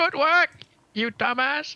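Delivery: very high, shrill, distant shouting. Walking to the inn, shouting back at Zenith: yelling. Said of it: "I'm like yelling at him".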